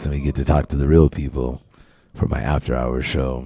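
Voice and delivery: voice dropped very low and deep. Host introducing his after-hours show, voice brought down low. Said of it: "bring my voice down like this".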